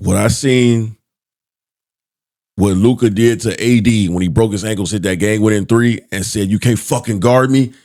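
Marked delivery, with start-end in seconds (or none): 6.5-7.7 mock yelling, higher pitch. Retelling a player taunting an opponent after a game-winner: imitating someone yelling. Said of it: "he's yelling at him, barking at him".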